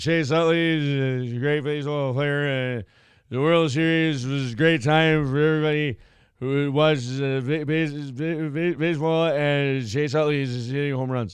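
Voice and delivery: mock announcer voice with halting, stammering delivery. Imitating a pa announcer introducing chase utley: imitating a halting announcer. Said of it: "listen to you talk like that".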